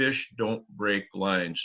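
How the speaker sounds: mock dry, matter-of-fact deadpan, said quietly. Retelling his answer after a companion said a big fish broke their line, deadpan. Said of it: "I looked at him deadpan right in the face".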